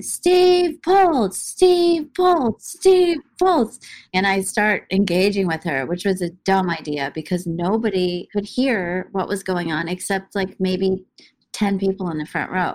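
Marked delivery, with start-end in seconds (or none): 0.0-3.8 mock female-sounding yelling, much higher, slower. Speaker recounts a woman at the front of the crowd yelling a name: imitating a woman yelling. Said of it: "she starts yelling".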